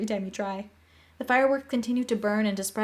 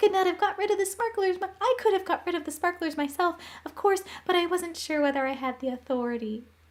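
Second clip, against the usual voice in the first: small, squeaky little voice, pitched high; 8 semitones higher than usual. Reading a story aloud, a small professor thanking someone: squeaky little voice. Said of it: "in his squeaky little voice".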